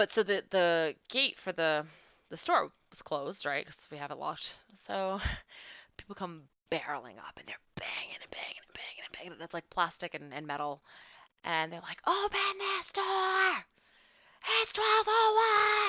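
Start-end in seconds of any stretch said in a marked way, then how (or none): 12.1-15.9 put-on yelling, higher, louder. Retelling customers banging on the locked store gate, imitating customers yelling. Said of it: "the more they yelled".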